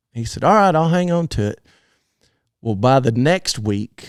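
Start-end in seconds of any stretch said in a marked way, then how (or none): 0.5-1.6 naturally loud, easy, relaxed delivery, pitched up. Retelling what a loud-talking roper said about a rope: imitating Fred talking real loud. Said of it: "he talked real loud".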